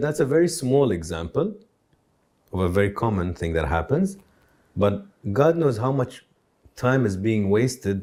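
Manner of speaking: ordinary talk, nothing marked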